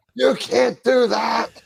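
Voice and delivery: put-on very high, rough, creaky angry voice. Imitating a viewer complaining about something he posted, mock-angry commenter voice. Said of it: "the angry viewer voice was".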